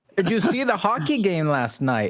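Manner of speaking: bad put-on Canadian accent. Taking your turn at the accent after the other speaker, use a bad Canadian accent. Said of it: "I can't do a Canadian".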